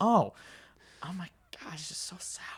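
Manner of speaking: audible stage whisper, exclaimed out loud. Retelling first tasting something very sour: imitating own past whisper. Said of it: "you're whispering that out loud".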